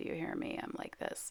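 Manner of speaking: soft, breathy, creaky, heavy vocal fry. Mid-demonstration, the speaker remarks on their own voice, in heavy vocal fry. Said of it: "I have a lot of vocal fry going on today".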